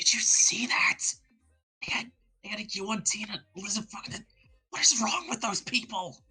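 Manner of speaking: put-on high whisper. Imagining Silas turning to everyone as the others ride away, whispering. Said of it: "he just whispers to everyone".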